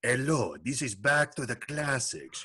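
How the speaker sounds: put-on Spanish accent. Trying out a radio show greeting: put-on spanish accent. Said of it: "I was going to throw in some like Spanish accent with it".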